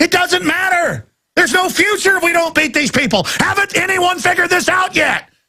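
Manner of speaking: high-pitched, shouted, heated delivery. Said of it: "You really hit my hot button right there".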